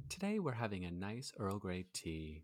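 quiet close-mic voice. Joking about public radio with a co-host, a speaker does a close-mic NPR host voice. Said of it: "really close to the microphone and it's very subtle".

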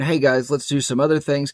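plain

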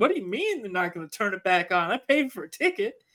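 agitated, freaking-out, put-on Southern accent. Retelling what an angry moviegoer said when the film stopped: imitating a moviegoer in Southern accent. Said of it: "I gave him a Southern accent".

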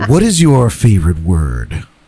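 animated talk-show interviewer voice with wide pitch swings. Asking the rapid fire interview questions as James Lipton: James Lipton impression. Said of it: "let me get full James Lipton".

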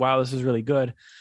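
ordinary talk

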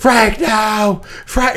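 contained, held-back cry, like a yell. Describing a movie scene where a man at gunpoint calls out, retelling a movie character's yell. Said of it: "but he's yelling".

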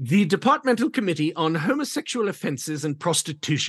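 put-on British English accent. Announcing the official name of a British committee, in a put-on British voice. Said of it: "You do that voice very well".

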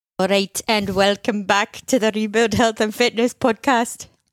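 put-on Welsh accent in a show host presenting voice. Opening the podcast episode while imitating James's Welsh accent. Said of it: "[name]'s amazing Welsh accent".

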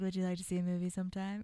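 muttered under breath. Retelling what a friend said next, under his breath: muttered under his breath. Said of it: "And then under his breath".

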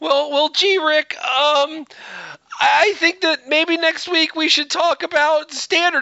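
bad, stumbling, high-pitched cartoon voice with halting stammer. Teased by another speaker, answering Rick in a bad Morty impression. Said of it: "Your Morty is so bad".

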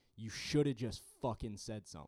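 pissed-off loud yell. Retelling how a man yelled at the speaker, imitating someone yelling. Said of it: "yelling at me".

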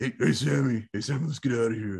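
terrible attempt at a gruff voice. Doing an impression of the brother from Supernatural: terrible Dean impression. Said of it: "That was a terrible Dean".

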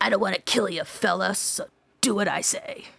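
rough, gruff, put-on tough-guy voice. Telling a story, the speaker quotes an armed mystery man in a gruff voice impersonation. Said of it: "in a gruff voice".

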